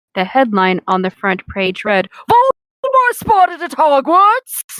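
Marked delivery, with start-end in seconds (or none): 2.3-4.8 shrill, very high, put-on yelling shout. Reading a newspaper headline aloud from a story, yelled in a put-on voice. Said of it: "you yelling that in that voice".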